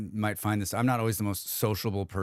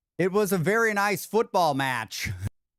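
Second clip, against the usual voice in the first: put-on thick American accent, pitched very high and loud; 10 semitones higher, 4 dB louder than usual. Imitating how some young people sounded: very American accent. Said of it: "This was their American accent. Are you ready? ... That's how they sounded".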